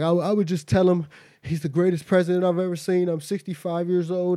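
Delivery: mock, high, choked-up voice catching, close to tears. Retelling a sixty-five-year-old man's answer about Trump: imitating someone choked up and crying. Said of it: "he got choked up".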